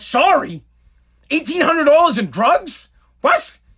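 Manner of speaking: acted furious disbelief, high and steaming. Recounting past anger at the mother over stolen money; retelling steaming anger. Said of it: "I was steaming".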